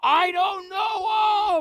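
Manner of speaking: slow, drawn-out yelling. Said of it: "And he's yelling".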